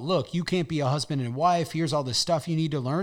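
usual speaking voice

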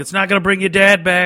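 loud, high, taunting trash-talk shout. A gamer describes what he shouts every time he dies, retelling his in-game yell. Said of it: "I just start yelling".

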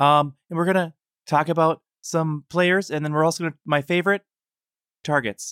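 very small, squeaky, high mousy voice. Podcast host imitating a troll's podcast intro, in a super mousy voice. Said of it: "he's like super mousy voice".

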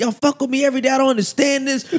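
fed-up rant. Speaker recalls losing it at a laughing class, retelling own angry rant. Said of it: "I'm just going off, like on a rant".

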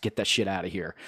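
ordinary delivery

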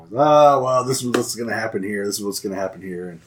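sarcastic, snide voice. Retelling replies to questions asked while watching: imitating sarcastic comments. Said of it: "he'd make sarcastic comments about it".

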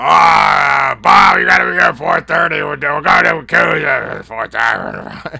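very loud, rough, booming, high, creaky, dragging drawl. Retelling his own impression in a Pat-off: imitating Pat. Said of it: "This is a good Pat".

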